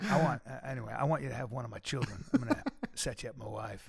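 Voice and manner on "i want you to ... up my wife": put-on, deliberately creepy voice. Joking to the other speaker about having your children: put-on creepy voice. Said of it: "My voice gets really creepy when I start talking like that".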